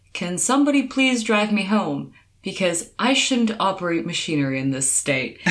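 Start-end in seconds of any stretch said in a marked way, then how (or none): none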